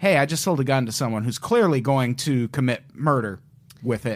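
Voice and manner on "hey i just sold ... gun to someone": usual speaking voice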